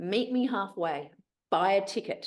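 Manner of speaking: slow, deliberate, godlike heavenly voice. Retelling a joke where a voice answers a woman praying to win the lottery: booming voice. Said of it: "there's this booming voice that says".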